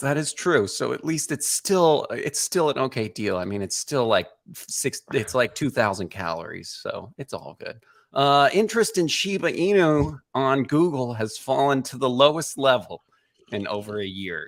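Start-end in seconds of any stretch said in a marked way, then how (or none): 8.5-14.5 voice straining against suppressed laughter while speaking. Reading a news headline aloud: holding back laughter. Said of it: "I'm trying not to laugh while I read this headline".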